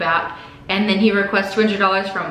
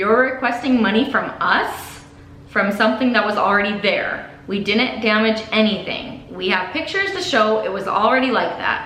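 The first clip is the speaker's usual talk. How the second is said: normal talking voice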